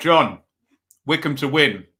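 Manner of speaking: speaking through a mouthful. Giving a match prediction, talking with mouth full. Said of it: "excuse my mouthful".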